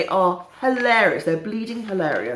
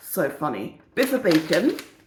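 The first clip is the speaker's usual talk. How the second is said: normal talking voice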